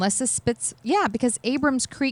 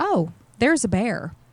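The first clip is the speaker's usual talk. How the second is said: very calm, plain, matter-of-fact tone. Retelling how Randy spotted a bear on the trail: calm matter-of-fact. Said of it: "very calmly goes".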